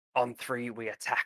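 hushed, leaning-in, conspiratorial half-whisper. Voicing a character who leans in to call an attack: half-whispering. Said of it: "kinda whispers".

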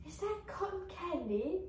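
put-on small childlike voice, like a four-year-old. Retelling a childhood memory at a cotton field, little four-year-old voice. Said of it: "In my little, like, 4-year-old voice".

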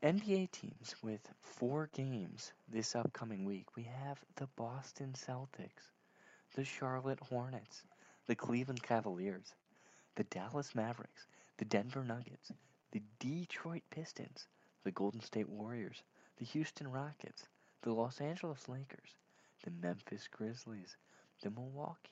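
hushed, calm, soft and level radio announcer. Giving the weekly schedule analysis to the others, NPR voice. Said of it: "while I do the NPR voice".

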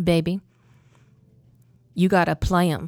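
put-on sweet voice. Retelling what a colleague said about rehearsals: imitating Denise speaking sweetly. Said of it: "she very sweetly, in her very Denise way".

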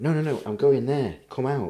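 put-on very polite tone. Retelling own words to an old lady blocking a car park: retelling being very polite. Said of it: "And I'm dead polite".

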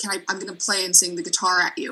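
normal talking voice

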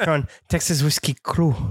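French-sounding accent. Announcing the show name with the others: sounding French. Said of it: "Sounds very French in a hurry".

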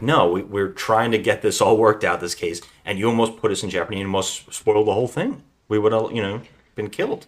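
ordinary talk

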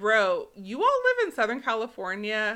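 ordinary delivery

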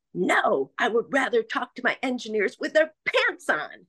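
very loud, very high declaring voice. Retelling what the speaker said near the hr department, very loud voice. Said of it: "I said in a very loud voice".

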